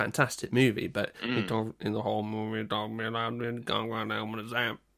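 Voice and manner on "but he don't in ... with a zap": unintelligible, garbled, hard-to-understand delivery. Doing an impression of Jeff Bridges in True Grit: Jeff Bridges impression. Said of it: "That was my Jeff Bridges impression".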